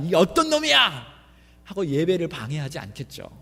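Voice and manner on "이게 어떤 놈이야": high, angry outburst, blurted. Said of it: "막 화가 나가지고".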